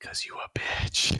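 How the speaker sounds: soft, hushed, breathy whisper. Narrating a scene and voicing a character's line, whispering. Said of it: "And Greg whispers".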